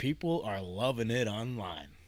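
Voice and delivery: slow, sarcastic, ironic remark. Commenting on online reactions to numbers being retired: sarcastic. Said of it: "I mean this in the most sarcastic way".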